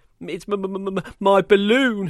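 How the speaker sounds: stammering. A narrator voices a girl answering Dave's question: stammering. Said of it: "she stammered".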